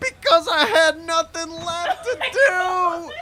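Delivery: screamed-raw, hoarse, shrill, very loud high voice. Answering questions over an intercom during an interrogation; hoarse from screaming. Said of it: "We found your male hymen, / I'm screaming, but I can't even scream anymore. My voice is so hoarse".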